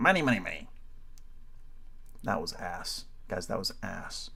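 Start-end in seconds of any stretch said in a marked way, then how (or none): 0.0-0.7 badly done put-on cartoon crab voice. Trying out cartoon voices one after another: Mr. Krabs voice. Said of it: "mister Krabs. ... mister Krabs was not very good".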